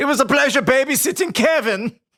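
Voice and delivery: put-on German accent. Imitating german guys from a comedy sketch: imitating german guys screaming. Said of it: "I used to be able to do a really good German voice".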